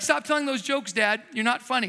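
plain

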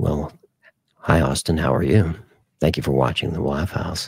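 very low, sultry bedroom voice. Host greeting viewer austin, who is laying in bed, in bedroom voice. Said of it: "That's my bedroom voice".

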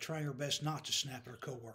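plain

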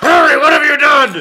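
put-on shrill, booming, very high, loud drunken yell. Retelling a scene where Dumbledore grabs Harry: imitating a drunk Dumbledore. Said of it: "he's drunk in the fourth one".

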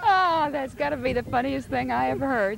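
speaking through helpless laughter. Reacting to a hog-calling performance, laughing while talking. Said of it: "I can't stop laughing".

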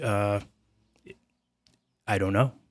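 really baffled, confused, puzzled tone. Commenting on a long-running unresolved news story, in a confused tone. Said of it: "I say that with a really confused tone".

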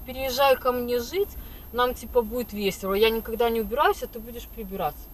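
ordinary delivery

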